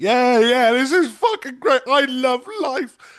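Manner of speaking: put-on drunk voice, very high and loud. Describing drinking at three in the morning listening to music, imitating own drunk self. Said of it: "drunk off my tits".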